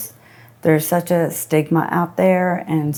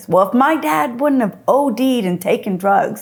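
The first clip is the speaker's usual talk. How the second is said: very loud, high, acted kid's voice outburst; 7 semitones higher than usual. Retelling what he would blurt out in a restaurant, in a very loud voice. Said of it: "he would say in a very loud voice".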